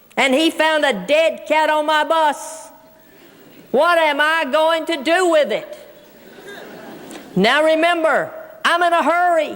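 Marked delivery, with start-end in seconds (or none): none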